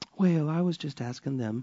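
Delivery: put-on Southern lady voice. Speaker teaching about troublemakers in church, slipping into a southern church lady voice. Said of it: "I threw on my southern church lady voice there".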